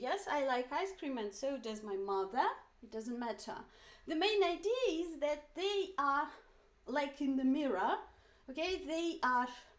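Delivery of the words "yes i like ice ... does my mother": ordinary talk, nothing marked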